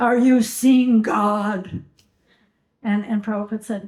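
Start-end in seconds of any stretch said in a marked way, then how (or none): 0.0-1.8 acted, slow, booming voice, "God" drawn out. Retelling how an arrogant young man asked a question: imitating a booming voice. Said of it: "asked him in this booming voice".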